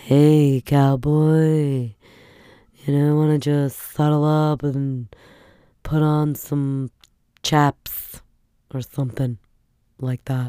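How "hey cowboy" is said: call-in phone sex line voice. Speaker shows how their voice would suit a sex channel: sex channel phone-line voice. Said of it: "my voice would be good for like a sex channel".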